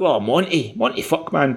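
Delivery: bad, poor put-on Scottish accent. Retelling how a TikTok video review starts: Gordon Ramsay's bad Scottish accent.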